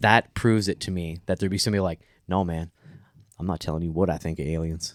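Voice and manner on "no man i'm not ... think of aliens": blunt, put-on southern American accent. Imagining a survey respondent who refuses to answer, southern accent. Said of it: "you know that guy got a southern accent".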